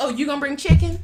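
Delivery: very loud, high, patronizing, condescending voice. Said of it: "They're like".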